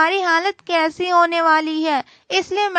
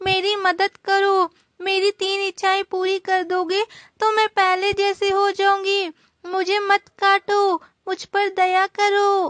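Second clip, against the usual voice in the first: tearful, crying, pleading voice. Voicing a dry tree begging a wood-cutter not to cut it: crying while pleading. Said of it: "मत रो सूखा पेड़".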